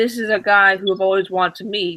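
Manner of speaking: normal talking voice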